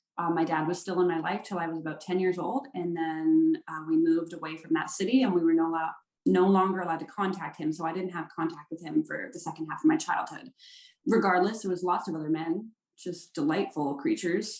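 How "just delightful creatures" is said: heavy, obvious, openly sarcastic tone. Describing the men who came in and out of their lives: sarcastic. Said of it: "note the sarcasm in my voice".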